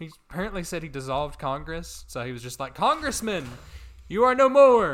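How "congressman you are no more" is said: very high, very loud, shrill, booming full-throated scream. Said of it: "he just was in the public square screaming".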